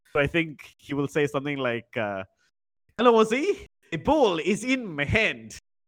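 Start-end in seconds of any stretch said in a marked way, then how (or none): 1.9-5.5 bad Indian-accented fake French accent, high and slow. Predicting what another person will say, the speaker does a bad fake french accent. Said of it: "the accent that I'm about to do now".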